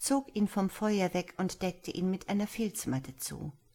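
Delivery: ordinary delivery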